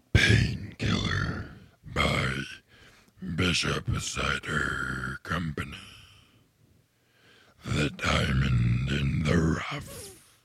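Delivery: fake cavernous movie voice. A podcast co-host, asked by the other host, reads the intro in the Aladdin cave voice. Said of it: "Read the beer that we're gonna do today with the cave voice".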